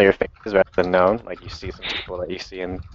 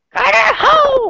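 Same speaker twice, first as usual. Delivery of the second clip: very high, loud creature voice; 7 dB louder than usual. Asked on stream to do the catchphrase in the Carter voice. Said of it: "do Carter Ho in the Carter voice".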